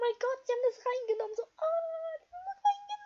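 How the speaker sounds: put-on, very high, excited, swooping fangirl squeal. Speaker retells their reaction to seeing Noah dab, retelling a fangirl freakout. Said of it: "Total Fangirl ausrast".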